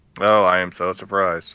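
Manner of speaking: heavy sarcastic tone with feigned surprise. Reacting to news of talks to bring someone back: sarcastic tone. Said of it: "Forgive the sarcasm in my voice".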